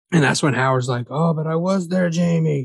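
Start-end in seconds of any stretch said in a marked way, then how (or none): 1.1-2.6 put-on rough Irish accent drifting into Scottish. Retelling what Howard said to Jamie, imitating Howard, Irish-ish accent. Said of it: "he's not Irish".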